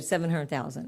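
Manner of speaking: ordinary talk, nothing marked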